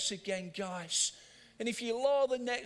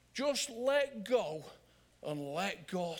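put-on Sheffield accent. Quoting a phrase a preacher always got in when he preached, use his Sheffield accent. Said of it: "in his Sheffield accent".

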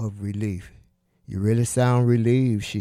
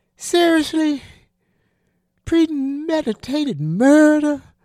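shrill, loud, very high exclaiming; 6 dB louder than usual. A woman responds to the narrator's objection, exclaimed. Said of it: "Pamela exclaimed".

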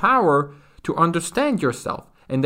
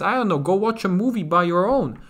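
normal talking voice

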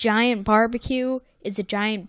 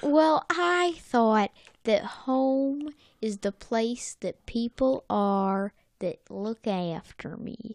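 thick, slow Southern American drawl; 4 dB quieter than usual. Quoting Sandy saying home is where people look after her: super southern accent. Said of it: "Why'd I just do a super southern accent there?".

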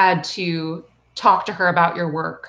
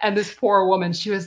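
ordinary talk, nothing marked

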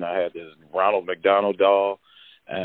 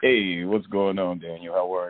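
put-on deeper voice, dropped lower on purpose. Greeting the visiting interviewer at his Harlem studio, changed deeper voice. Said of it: "did you change your voice on me?".

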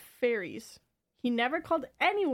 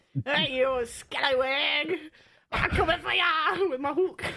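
taunting put-on stage pirate accent; 4 semitones higher, 4 dB louder than usual. Speaker demonstrating to the other speaker how to do the accent, in a pirate accent. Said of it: "you can work on that accent too".

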